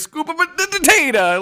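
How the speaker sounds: high, slow, mock Italian accent.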